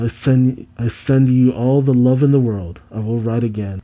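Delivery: ordinary delivery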